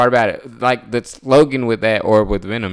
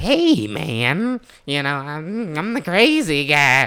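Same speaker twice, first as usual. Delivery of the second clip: very slow, stretched-out, swooping high drawl; 7 semitones higher than usual. Describing a cartoon villain's one-liners in a Carnage voice. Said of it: "why does your Carnage sound like your Joker?".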